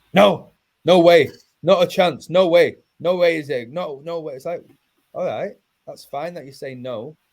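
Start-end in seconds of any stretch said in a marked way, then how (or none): 0.1-4.3 loud, high, drawn-out screaming, word by word. Acting out people who shout back when god comes up, retelling people shouting. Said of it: "they shout".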